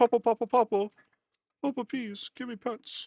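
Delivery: very high, pleading, begging little dog voice. A dog owner speaks for his dog sitting next to him, voicing the dog begging. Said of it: "She's like".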